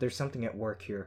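plain reading voice

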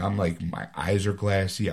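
usual speaking voice

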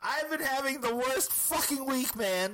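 shrill, loud, high-pitched shout. Complaining about a bad week, the speaker is yelling into the microphone. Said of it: "you know you don't have to yell into the microphone".

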